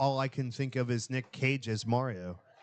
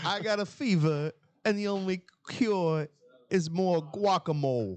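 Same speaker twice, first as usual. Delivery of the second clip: put-on Spanish accent, pitched a touch higher; 5 semitones higher than usual. Imagining an audition where he is asked for Spanish: Christopher Walken doing Spanish accent. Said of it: "let me hear your Spanish".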